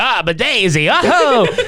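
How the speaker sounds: very slow, high, every word stretched out. Imagining a movie scene where the character Luigi greets Daisy: Luigi voice. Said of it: "but he talks like Luigi".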